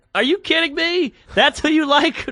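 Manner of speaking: put-on, very high words spilling through laughter. Retelling a reply to a comic about Carlos Mencia: imitating own laughing reply. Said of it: "I laughed out loud into the microphone".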